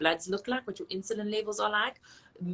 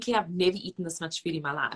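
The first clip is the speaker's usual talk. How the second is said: ordinary talk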